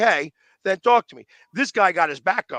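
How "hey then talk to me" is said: plain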